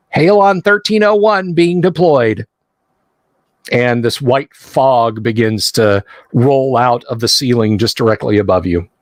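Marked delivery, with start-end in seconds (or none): 0.1-2.4 high, tinny, automated recorded-system voice. A game narrator voicing an automated announcement as sparks fly, tinny automated voice. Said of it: "this very tinny voice".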